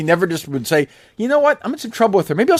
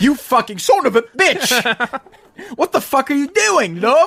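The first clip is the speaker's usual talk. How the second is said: put-on angry, high, patchy British accent slipping in and out; 5 semitones higher than usual. Someone on the call suddenly screams at the other speaker: screaming, inconsistent british accent. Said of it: "This sounds like my girlfriend who's British".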